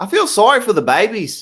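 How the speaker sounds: put-on loud, high-pitched Australian accent. Reading out someone's comment, accidentally slipping into an Australian accent. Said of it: "What I just did was Australian".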